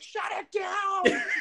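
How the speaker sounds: very high squealing, scream-like, way up high. Retelling how a person at the museum ran with the phone; retelling a scream. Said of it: "started screaming like".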